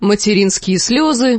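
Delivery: plain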